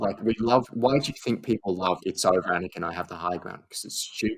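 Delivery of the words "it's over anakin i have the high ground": ordinary talk, nothing marked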